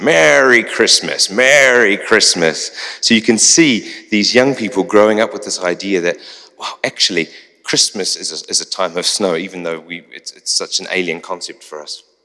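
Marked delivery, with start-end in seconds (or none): 0.0-2.7 put-on American accent, slow, drawn out, loud. Retelling what young people on a walk said under a tree, american accent. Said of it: "in an American accent they said".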